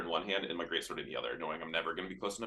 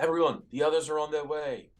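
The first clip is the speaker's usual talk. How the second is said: high, loud yell, fully in character; 8 semitones higher, 6 dB louder than usual. Calling out to allies during a fight, in-character yell. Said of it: "I'm gonna yell".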